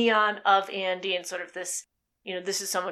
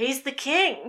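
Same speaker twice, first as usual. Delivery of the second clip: put-on emphatic, incredulous disbelief, pitched higher; 6 semitones higher than usual. Repeating a wrestling commentator's line: imitating an emphatic, incredulous call. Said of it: "emphatic but incredulous at the same time".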